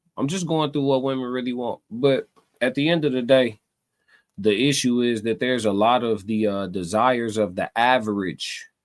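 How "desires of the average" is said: "average" stressed with long falling tune. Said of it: "emphasis on average".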